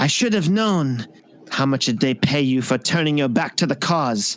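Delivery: contemptuous sneering tone. Voicing a Vulpin who calls a player's character a traitor: sneering. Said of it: "and sneers".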